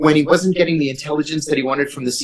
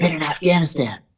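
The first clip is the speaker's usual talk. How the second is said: soft, hushed half-whisper with no voice; 3 dB quieter than usual. Recounting running into a man in the hall after weeks away: retelling a half-whisper. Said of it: "And he whispers".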